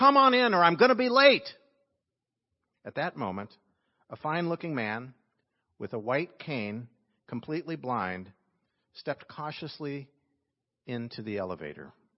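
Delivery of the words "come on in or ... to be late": very loud, high, impatient, irritated put-on voice. Retelling a story of a man hurrying an elevator: imitating a louder, irritated voice. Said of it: "in a louder voice".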